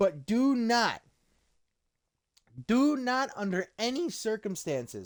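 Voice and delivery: voice cracking. Arguing a point about two rappers, voice cracking. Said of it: "sorry for the voice crack".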